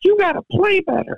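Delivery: very high, squeaky little cartoon voice. Retelling what Jack said back to you, sounding like the Gingerbread Man in Shrek. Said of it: "sounded a little bit more like the gingerbread man in Shrek".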